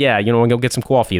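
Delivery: put-on Brooklyn accent. Retelling own speech after dinner with an old landlord: Brooklyn accent. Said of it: "you're talking like a Brooklyn guy".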